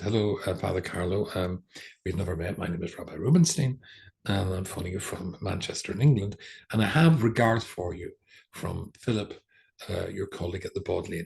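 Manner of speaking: ordinary talk, nothing marked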